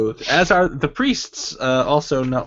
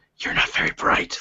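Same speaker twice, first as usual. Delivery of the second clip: breathy, taunting whisper. The narrator voices a rabbit skull in a player's pocket, in a whisper. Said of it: "you hear a whisper that says".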